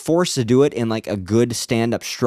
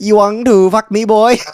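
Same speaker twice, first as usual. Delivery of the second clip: put-on Vietnamese accent, very high and very loud; 10 semitones higher, 9 dB louder than usual. Retelling a joke seen on someone's Facebook page, in a Vietnamese accent. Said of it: "he did the accent".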